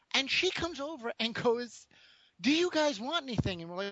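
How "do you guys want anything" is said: mock yelling, pitched higher. Retelling how she came over and yelled while the baby slept: retelling a yell. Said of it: "And she's yelling".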